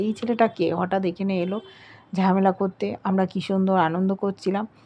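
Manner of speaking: ordinary delivery, nothing marked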